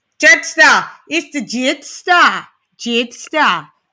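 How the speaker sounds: slow, try-hard attempted Australian accent. Speaker trying out an accent on a nickname, attempted Australian accent. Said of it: "Is that my Australian accent?".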